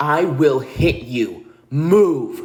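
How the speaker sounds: put-on angry yell, loud and slow, "move" dragged out. Retelling warning a man blocking the road: imitating a loud angry shout. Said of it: "But I shouted at him".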